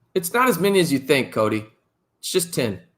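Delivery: thickly sarcastic, heavy dripping sarcasm. Reporting a team's penalty count during the game: heavy sarcasm. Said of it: "I say with so much sarcasm".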